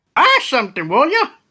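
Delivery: put-on very high, elderly old woman's voice. A kenku shopkeeper behind a counter repeats its line, old woman's voice. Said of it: "in an old woman's voice".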